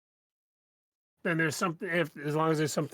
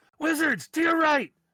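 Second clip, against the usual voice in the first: high, loud yelling. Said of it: "I yell down".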